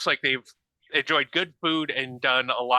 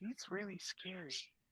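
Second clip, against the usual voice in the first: tiny, very quiet, hushed little voice; 6 semitones higher, 22 dB quieter than usual. Game master voicing someone speaking from behind Xander, in a tiny voice. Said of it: "a tiny voice just say".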